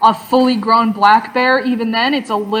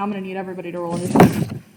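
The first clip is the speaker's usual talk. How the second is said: ordinary delivery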